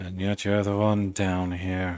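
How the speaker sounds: put-on British accent. Voicing a drow talking to a caged character: British accent. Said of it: "He has a British accent".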